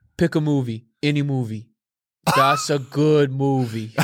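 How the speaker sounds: put-on, deep, bad Boston accent. Quoting a movie line for others to name, in a Boston accent. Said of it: "it sounds Boston".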